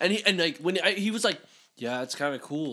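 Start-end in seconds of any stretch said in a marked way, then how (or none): 1.8-2.7 put-on cool, casual tone, lower. Retelling what a coworker said about a band: imitating someone playing it cool. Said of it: "playing it, like, really cool".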